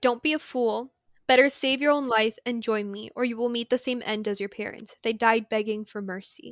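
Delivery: normal talking voice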